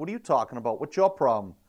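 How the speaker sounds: imitated rude, snapping retort. Retelling how they answered a truck driver back then: imitating own past rude retort. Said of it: "I was very rude to the people".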